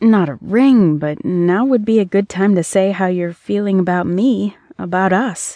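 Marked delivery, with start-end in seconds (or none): none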